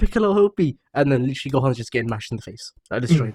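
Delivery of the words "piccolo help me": very high, loud shout. Describing a cartoon fight scene: Gohan shouting for help. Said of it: "Gohan's down there shouting".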